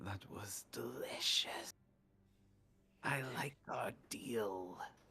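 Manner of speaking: unhurried, slow, drawn-out voice. Telling a game scene where Hollow speaks in your head, slow Hollow voice. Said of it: "you just hear his voice in your head slowly being like".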